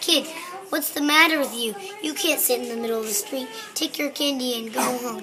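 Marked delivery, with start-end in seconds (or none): none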